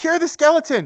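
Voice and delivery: very high, acted, in-character scream. Voicing a character who answers an ally's call: screaming in character. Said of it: "Argus screams back".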